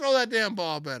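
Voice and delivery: yelled out loud in a high pitch. Retelling how a quarterback yelled at a teammate: imitating a player yelling. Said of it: "He's yelling at him".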